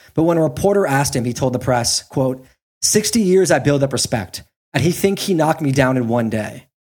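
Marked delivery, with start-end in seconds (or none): none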